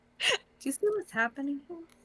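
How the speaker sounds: hushed, half-whispered voice. Leaning close to another character during the scene: half-whispering. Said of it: "I'm whispering".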